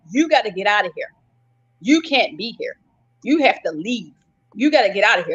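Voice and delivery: insistent, repeated, broken-record delivery. Retelling what the store manager kept saying: imitating the manager ordering her out. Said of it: "That's all he kept saying".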